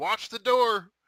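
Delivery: very high, very loud, booming yell. Playing a character who yells over the shoulder while leaving: yelling over the shoulder. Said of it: "I'll just yell over my shoulder".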